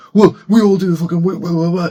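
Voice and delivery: high, loud, mocking imitation.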